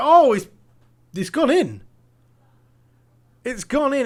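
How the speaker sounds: commentator-style excited cry, high and loud.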